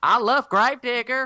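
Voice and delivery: put-on very loud, very high, thick Southern accent. Recalling how she used to talk: very Southern accent. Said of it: "very, very Southern".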